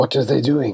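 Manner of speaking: words hissed out. A narrator voices Locke, a gentleman walking behind the players: Locke hissing. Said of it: "who hisses".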